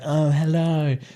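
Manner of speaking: proper, prim, well-mannered, polite gentleman voice. Describing a man the speaker goes on dates with and how he talks, imitating a polite gentleman. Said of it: "and he talks like this".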